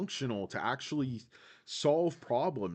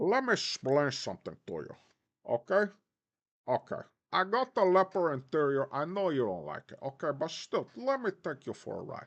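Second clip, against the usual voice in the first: put-on Cuban-accented English. Acting out a scene, the speaker answers the manager in a cuban accent. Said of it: "How is this even a Cuban accent?".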